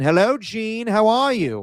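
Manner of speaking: put-on odd British accent, very high, stretched slow. Imitating the actor playing the dad answering the phone, Rob Reiner's weird British accent. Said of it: "he has like this weird British accent".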